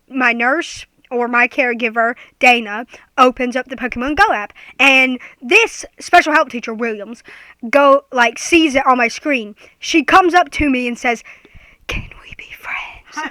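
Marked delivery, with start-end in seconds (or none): 11.8-13.3 odd, breathy, very quiet whisper. Retelling what a teacher said when she came up: imitating a weird whisper. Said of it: "in a weird, like, a weird whispered voice".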